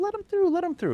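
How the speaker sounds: tiny, sweet little voice, very high. Retelling how a man eating Snickers tells his security about an approaching older gentleman, very sweet little voice. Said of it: "Very sweet little voice".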